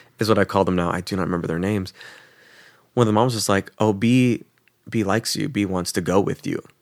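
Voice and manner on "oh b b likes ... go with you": usual speaking voice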